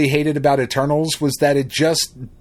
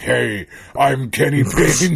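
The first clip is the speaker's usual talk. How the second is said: deep, low voice, very slow and drawn out. Retelling how the grown-up kid actor introduced himself, imitating Kenny Payne's deep voice. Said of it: "with my deep voice all of a sudden".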